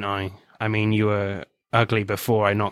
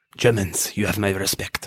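bad put-on French accent. Retelling a favorite line from something they watched: terrible Eric Cantona French accent. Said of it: "that was a terrible French accent".

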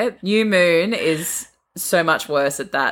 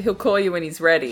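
ordinary talk

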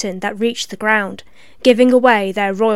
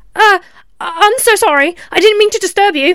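frenzied, frantic, very high-pitched and loud; 9 semitones higher, 5 dB louder than usual. Hallie, who has intruded on the princeps, speaks to them: frantic. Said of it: "she said frantically".

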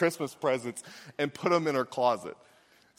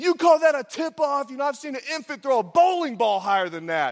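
high-pitched, screaming sports dad voice; 9 semitones higher, 4 dB louder than usual. Recalling a parent yelling at the ref during games, the speaker acts out: imitating dad screaming. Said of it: "My dad would just start screaming".

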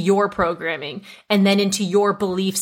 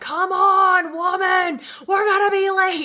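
put-on very high, stretched-out, drawn-out shriek; 11 semitones higher than usual. Retelling dad banging on the steering wheel, imitating dad screaming.

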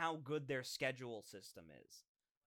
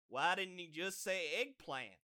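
put-on Texas accent; 4 semitones higher than usual. Recounting a game scene and quoting a mage character in a texas accent. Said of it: "dumbass mage with a Texas accent goes".

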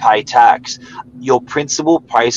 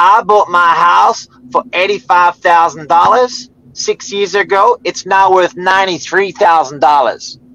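put-on American accent, higher and louder; 6 semitones higher, 4 dB louder than usual. Quoting a woman on a bus about her house: put-on American accent. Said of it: "Sorry about my American accent".

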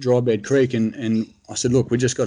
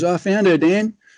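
mock yelling, high-pitched yelled-out call; 7 semitones higher, 3 dB louder than usual. Retelling how a fellow hunter called out from the creek: imitating someone yelling. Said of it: "he yells out".

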